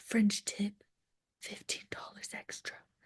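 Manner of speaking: hushed, very quiet, barely voiced whisper. Retelling what the nail salon receptionist said to her, imitating a whisper.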